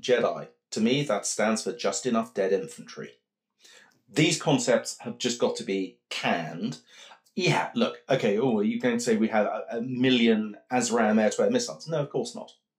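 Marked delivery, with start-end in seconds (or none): none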